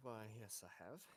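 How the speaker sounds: made-up talking cat voice. Voicing a cat answering a question through Speak with Animal: put-on cat voice. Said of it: "To make up a cat voice".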